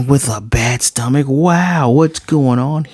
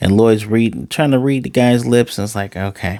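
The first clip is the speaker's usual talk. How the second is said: ordinary talk, nothing marked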